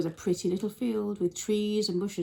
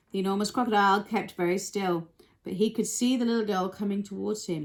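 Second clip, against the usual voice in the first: ordinary delivery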